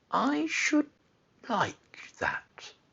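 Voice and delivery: very high, very slow, soft, drawn-out, dreamy voice. A boy answers Mary, speaking very slowly. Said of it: "he said very slowly".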